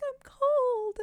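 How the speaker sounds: put-on horrible, very high-pitched ghost-girl voice. Recounting what the ghost of the girl said, in a horrible high-pitched ghost voice. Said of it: "the ghost of the girl had like this horrible like high pitched voice".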